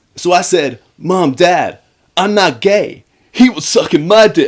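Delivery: put-on loud, high, belted-out American accent. Recapping a scene where Charlie holds court at the table: Charlie the Brit, American accent. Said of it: "you just did the Brit with a with an American accent".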